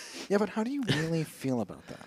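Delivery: put-on smug, self-satisfied, soft therapist voice. Retelling a story about a smug lady on a flight, in a mock-smug therapist voice. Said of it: "looking all smug".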